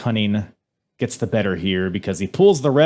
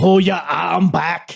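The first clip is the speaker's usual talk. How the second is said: bad, rough Scouse accent, slow, pitched up; 7 semitones higher than usual. Trying the wrestler's line again after being teased: bad Scouse accent. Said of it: "tune my brain".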